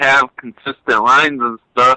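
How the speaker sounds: ordinary delivery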